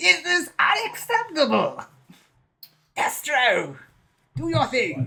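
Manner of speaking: very high cartoon-villain voice with big swoops. Speaker trying to save Hawk gives orders in a Cobra Commander voice. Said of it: "Think of it like Cobra Commander".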